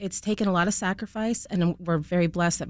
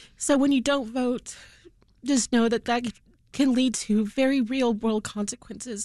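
speaking through tears; 5 semitones higher than usual. Speaker addresses listeners about elections, having just apologized for crying, crying. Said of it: "and I'm sorry for crying".

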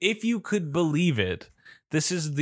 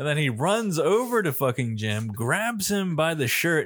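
ordinary talk, nothing marked

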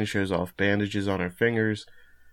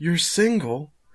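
mock high-pitched yelling, very close; 8 semitones higher, 3 dB louder than usual. Retelling a scene where he gets in her face: imitating Kogoro yelling. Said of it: "he yells".

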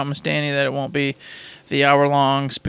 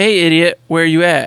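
ordinary talk

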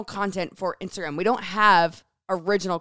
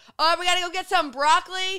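put-on big, booming, projecting voice, pitched high; 10 semitones higher than usual. Teasing the other speaker about their loud voice, imitating a booming voice. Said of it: "You're booming to the point".

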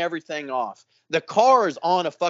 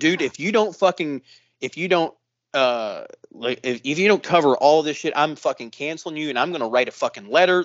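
ordinary talk, nothing marked

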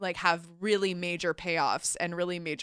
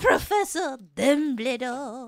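put-on French accent; 6 semitones higher than usual. Showing how a French character says a name, in Madame Maxime's French accent. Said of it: "I said it the way Madame Maxine says it".

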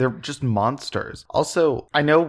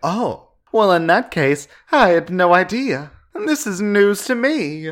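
put-on English accent, high and raised in pitch; 7 semitones higher, 5 dB louder than usual. Retelling Rose's reaction to his confession, mocking Rose in English accent. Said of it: "but in English accent".

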